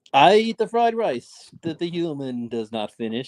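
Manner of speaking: put-on high-pitched talking dog voice. Speaking as the talking dog, in a talking dog voice. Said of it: "I'm a dog, the talking dog".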